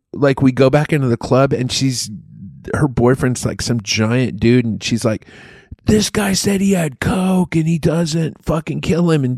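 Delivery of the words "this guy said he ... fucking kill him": put-on shrill, shrieking, high-pitched scream. Retelling what a woman said back in the club, imitating her screaming. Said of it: "she's fucking screaming".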